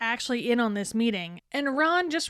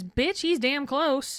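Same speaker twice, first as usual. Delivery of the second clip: put-on mom voice, pitched higher; 3 semitones higher than usual. Recapping a scene where Molly answers Sirius about Harry, Molly's mom voice. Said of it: "Molly brings out the mom voice and says".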